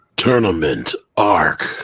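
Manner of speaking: very deep, low movie-trailer announcer voice. Asked by a co-host to yell a phrase, yelled movie-trailer voice. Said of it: "please yell this out in your movie voice".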